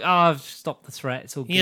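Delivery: normal talking voice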